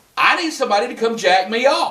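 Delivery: loud, rowdy, boisterous, proclaiming delivery. Telling a story about a woman at a service station, imitating a loud, boisterous voice. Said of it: "she proclaims in a loud, boisterous voice".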